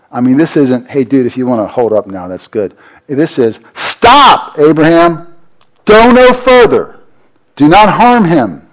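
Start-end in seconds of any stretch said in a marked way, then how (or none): 3.7-8.4 acted angel voice, very slow, loud, urgent, commanding. Retelling how the angel calls out to stop Abraham, acting out an urgent command. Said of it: "there's urgency in the angel's voice".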